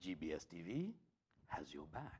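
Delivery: low TV announcer promo voiceover. Repeating the channel line with another voiceover delivery. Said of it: "It depends on the delivery, how you want it".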